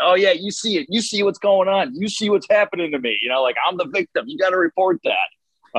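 mock shrill yelling, very high-pitched. Retelling what a player said coming out of the tunnel: imitating a player yelling. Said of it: "he was yelling at me saying".

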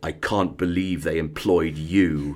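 darkly ominous, foreboding sidelong delivery. Retelling a teacher's remark at the first staff meeting: imitating an ominous tone. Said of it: "in a rather ominous tone".

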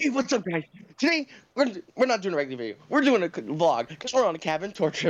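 breakneck, super fast, rattled-off delivery. Recreating a friend's old cabin tour video: super fast voice imitating Ben. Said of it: "I'll even do the super fast voice too, Ben".

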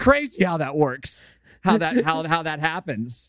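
high, wide, sarcastic sing-song of mock amazement.

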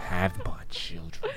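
very soft, hushed, eerie, creepy witch voice. Speaker repeats a line from a flirty good-morning text, sounding like the Wicked Witch of the West. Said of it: "Sound like the Wicked Witch of the West".

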